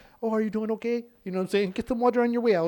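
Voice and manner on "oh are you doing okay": acted sugary, kindly, sweet, pitched-up nice voice. Retelling how a broom-wielding woman spoke to him, imitating a sweet, nice tone. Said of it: "she'd be all nice to me".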